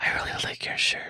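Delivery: soft, breathy, barely voiced whisper. Retelling how a girl at a drink machine said it: imitating someone whispering. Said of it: "she whispered to me".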